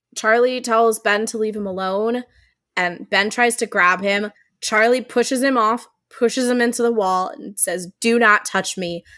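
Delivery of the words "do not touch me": put-on big voice. Retelling how one person pushed another into the wall, in a big voice. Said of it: "in just like this big voice".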